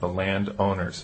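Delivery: landowners stressed, slow and deliberate.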